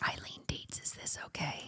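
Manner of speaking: soft, unvoiced whisper.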